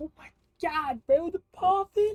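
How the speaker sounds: voice breaking mid-word, very high. Opening a pack of cards and reacting to a pull: voice cracking. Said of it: "W voice crack, though".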